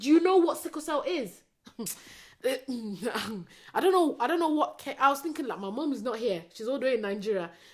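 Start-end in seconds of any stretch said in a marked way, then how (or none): 0.0-1.3 mock loud, pitched-up, boiling-over angry outburst. Retelling what they said to the person advising paracetamol, retelling an angry outburst. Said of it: "I just went mad".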